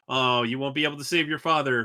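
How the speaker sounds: ordinary talk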